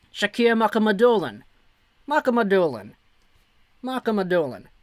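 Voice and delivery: New Jersey accent. Streamer saying a draft pick's name as once requested: New Jersey accent. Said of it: "Can you say Shakir Mukhamadullin in a New Jersey accent?".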